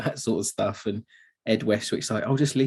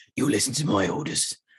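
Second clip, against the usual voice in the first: proper gruff put-on captain voice. Speaker quotes a movie character giving orders to Westwick, imitating a gruff voice. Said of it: "It's proper like gruff".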